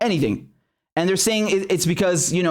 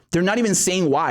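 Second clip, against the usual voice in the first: normal talking voice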